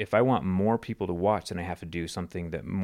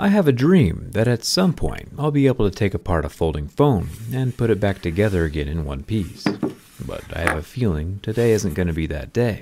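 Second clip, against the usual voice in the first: voiceover narration voice, much louder; 7 dB louder than usual. Asked about their videos, the speaker shows their voiceover narration voice. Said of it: "you have this narration voice".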